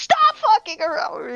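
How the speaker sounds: high, furious, angry screaming yell. Voicing a voice from a radio as its volume comes up: screaming voice from the radio. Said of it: "hear this screaming voice".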